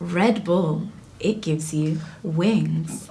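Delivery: very low, slow, drawn-out, sultry seductive tone. Practicing a sponsorship advert line: seductive voice. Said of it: "I'm trying to make it seductive. This is how I would do an advert".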